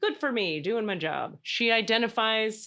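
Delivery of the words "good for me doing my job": ordinary talk, nothing marked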